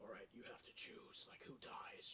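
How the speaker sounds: low, creepy, whispered puppet-like voice.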